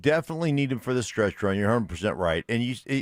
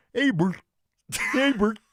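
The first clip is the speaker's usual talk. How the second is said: very high-pitched puppet voice; 11 semitones higher than usual. Showing how Ernie would sound after being asked for Bert: Ernie voice. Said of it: "Ernie's like".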